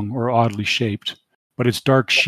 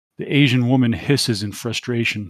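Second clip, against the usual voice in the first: plain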